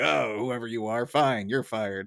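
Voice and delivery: furious, irate, boiling-over angry outburst. Describing a favorite clip before playing it, mock-irate Smithers impression. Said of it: "Smithers is so irate".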